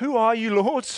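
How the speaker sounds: mock-nervous stammering. Retelling a man's stunned question to a voice he hears, acting out a nervous stammer. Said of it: "he probably stammers, I think, pretty nervously".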